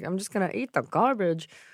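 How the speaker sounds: odd, surly put-on Rhode Island accent with attitude. Retelling a movie scene, imitating Rosie O'Donnell's character. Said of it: "You can get mad at me for imitating her".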